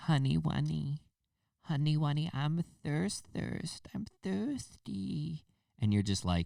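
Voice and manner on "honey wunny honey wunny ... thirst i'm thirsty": put-on cutesy, high, very slow, drawn-out baby voice. Mocking how some people talk, imitating them in a baby voice. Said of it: "people use baby voices".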